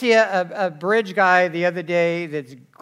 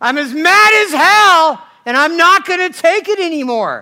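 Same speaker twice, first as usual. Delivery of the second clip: very loud, high, shrill, booming scream at full volume; 11 semitones higher, 9 dB louder than usual. Recalling a scene from the film Network, imitating the reporter's scream. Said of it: "he's screaming out the window at the".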